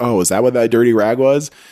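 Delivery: normal talking voice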